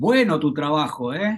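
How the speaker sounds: slow, ironic, sarcastic tone. Explaining in Spanish how words can mean the opposite: sarcastic. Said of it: "Y vos sabés que te estoy diciendo exactamente lo contrario".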